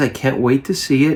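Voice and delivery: ordinary talk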